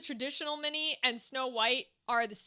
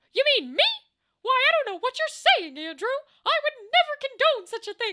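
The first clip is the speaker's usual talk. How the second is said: high-pitched, loud and fast; 12 semitones higher, 9 dB louder than usual. Answering Andrew in a Mickey Mouse voice. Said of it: "Mickey Mouse is one I can do".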